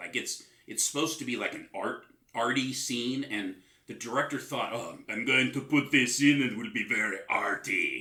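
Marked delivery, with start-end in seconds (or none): 4.7-8.0 put-on German accent with a pretentious tone. Imitating the film's director planning an arty scene: imitating director in German accent. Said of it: "with his German accent".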